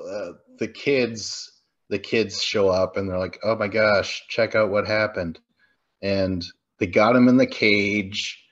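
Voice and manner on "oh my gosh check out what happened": usual speaking voice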